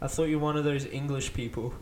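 normal talking voice

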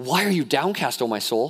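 mock scolding, yelling at oneself. Quoting the psalmist talking to himself: imitating the psalmist yelling at himself. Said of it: "he's yelling at himself".

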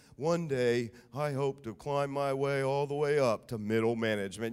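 very low, slow, level droning monotone. Quoting a boy from an old recruiting commercial, in a monotone little boy voice. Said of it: "in this kind of monotone voice saying".

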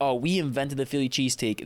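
ordinary talk

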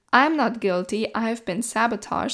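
ordinary talk, nothing marked

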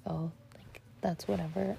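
plain

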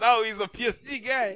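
said loudly. Teasing the other speaker about a player's transfer: said loudly. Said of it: "You didn't have to say it that loudly".

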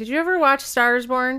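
loud shouting, yelled. A podcast host puts a question to the co-host, yelling. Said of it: "Why are you yelling at".

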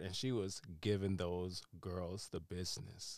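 ordinary talk

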